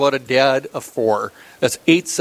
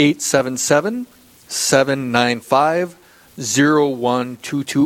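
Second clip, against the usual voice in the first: said at a slower pace. Host repeating the call-in phone number for listeners, said slower. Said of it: "I'll say that slower".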